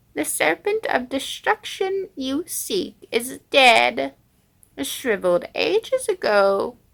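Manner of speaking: high, loud, ancient worm creature voice. The worm of pestilence addressing someone who has come seeking, worm of pestilence voice. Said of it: "I am the worm of pestilence".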